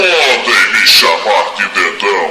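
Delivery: thick, very deep, loud villain growl. Reading a story about fingers, voicing the thumb as villain: even deeper thumb voice. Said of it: "E engrossando mais a voz".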